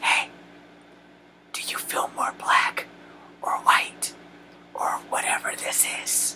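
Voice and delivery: slow, drawn-out whispered aside. Quoting how people ask about being mixed, whispered question. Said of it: "Now I whispered that because that's how they talk to me".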